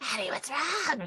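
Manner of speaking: eerie, high, creepy half-whisper. Retelling a reality show scene, imitating a creepy serial-killer half-whisper. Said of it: "whisper in her creepy serial killer voice".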